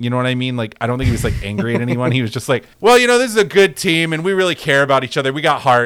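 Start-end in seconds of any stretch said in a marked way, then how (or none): 2.8-5.9 easy talk at yelling volume, loud and high. Imitating a head coach at a post-game press conference: Sean Lewis impression at yelling volume. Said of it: "he was at yelling volume".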